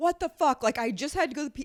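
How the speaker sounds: mock raging outburst, high and screamed. Retelling a guy coming out of the bathroom screaming: imitating a man screaming.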